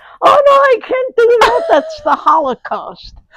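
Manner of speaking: mock upset outburst, very high, shrill and loud. Retelling a friend's reaction in the street: imitating Marilyn's upset outburst. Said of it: "she took a shit fit in the street and said".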